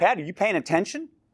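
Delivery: pointed, confrontational voice. Showing the room how a changed tone sounds when addressing Patty, sharp confrontational tone. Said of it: "if I change my tone of voice".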